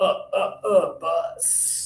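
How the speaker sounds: very slow, pressured "bus" pushed from the gut. Showing listeners how to pronounce the word bus: pressure in the voice. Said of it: "You gotta put some pressure in your voice".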